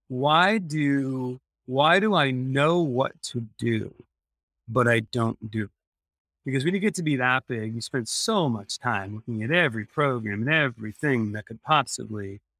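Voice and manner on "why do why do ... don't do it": ordinary talk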